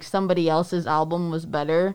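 ordinary delivery

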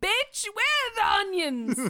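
screaming tirade in a British accent, very high and loud. Asked to do Gordon Ramsay, the speaker tries a Gordon Ramsay impression. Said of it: "Gordon Ramsay?".

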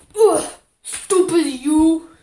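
loud, grunting, brutish half-orc voice. Voicing a half orc knocked to his knees: grunting half-orc voice. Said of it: "falls to his knees and he grunts and he's like".

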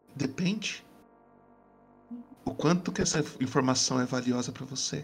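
woman's voice. Voicing a figure in the dark asking what information is worth: female voice.

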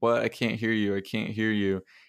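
ordinary talk

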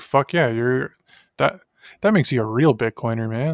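normal talking voice

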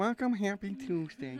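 high radio host voice. Greeting listeners as an impression of the co-host: imitating Maddie. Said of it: "your impression of me?".

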